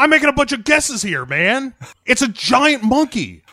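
mock very high, loud, fed-up angry shouting. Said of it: "yells back at the question".

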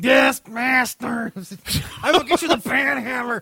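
eager troll servant voice. Imagining another speaker drawn into the comic: hunchback troll voice. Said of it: "like some, like, like, hunchback troll thing".

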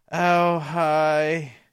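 soft, mopey, deflated, depressing, with drawn-out hi. Imagining how a receptionist character greets visitors, a depressing greeting. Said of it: "a depressing kind of like".

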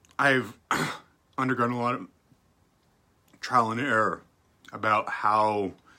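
talking with food in mouth. Speaker talking while eating, with a lentil stuck in the throat. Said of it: "I'm eating and I got one of the lentils kind of stuck in my throat".

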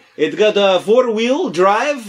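put-on bad Persian accent sounding Russian. Doing a used car salesman bit, the speaker uses Bentley's Persian salesman voice. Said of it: "I'm doing Bentley's version of a Persian used car salesman".

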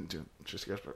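mock under-the-breath mumble. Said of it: "under his breath".

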